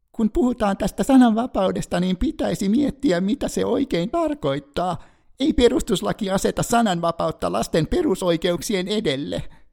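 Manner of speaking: very high, pinched, through-the-nose falsetto. Imitating a children's charity spokesperson quoted in the press, in nasal falsetto. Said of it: "matki falsetissa ja nenäänellä".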